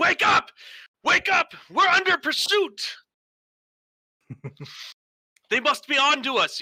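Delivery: very high, loud, street-tough screaming. A narrator voices the red-haired woman as she wakes the others, screaming. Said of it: "you could hear her start screaming".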